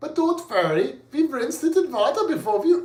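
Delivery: clumsy, failed Scandinavian accent, high and loud. Mock-reassuring that the food was rinsed in water: bad Scandinavian accent. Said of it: "I can't do a Scandinavian accent".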